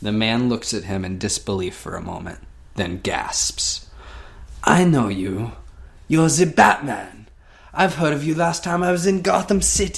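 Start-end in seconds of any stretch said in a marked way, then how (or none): 4.6-10.0 poor fake French accent, pitched up. Telling a Batman story, voicing a man who recognizes Batman, in a bad French accent. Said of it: "My French accent sucks".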